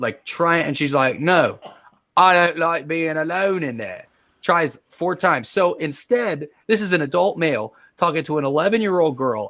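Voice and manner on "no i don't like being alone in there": put-on strong Cockney accent, higher. Retelling how a young girl's words came out: very British Cockney accent. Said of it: "she has a very British Cockney accent".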